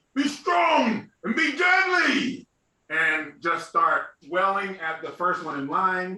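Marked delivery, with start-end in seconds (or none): 0.2-2.5 shrill, very high, loud war yell. Voicing a character's battle cry during a surprise attack: loud battle cry yell. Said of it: "And I'm gonna yell".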